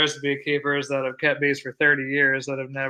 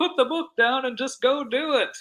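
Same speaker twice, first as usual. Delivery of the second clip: put-on broad Minnesota accent, pitched very high; 11 semitones higher than usual. Retelling what a guy at the bee club said, in Neil's big Minnesota accent. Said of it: "in his big Minnesota accent".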